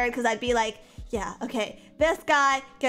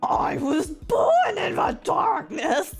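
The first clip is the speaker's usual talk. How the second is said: high, weird, swooping monster-villain voice; 6 semitones higher than usual. Picking characters, the speaker attempts a Bane impression. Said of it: "I can't do Bane".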